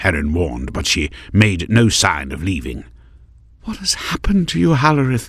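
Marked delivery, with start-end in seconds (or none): 3.6-5.3 very high, soft half-whisper. Narrator reads a queen staring at a broken window: half-whispered. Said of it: "she whispered".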